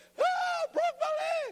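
shrill, very high put-on little child wail. Parent imagining a kid who fell down at the park, imitating a wailing kid. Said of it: "They could be wailing".

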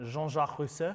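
proper French accent pronunciation. Naming a figure from the French Revolution: French accent. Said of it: "you gotta say it with the French accent".

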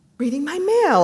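guarded tone. The narrator answers when asked what they're doing, defensive. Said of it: "I said defensively".

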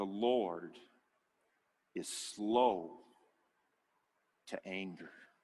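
slow, deliberate, halting word-by-word reading. Rereading a verse about the Lord aloud: read slowly. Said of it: "Let me just read that slowly".

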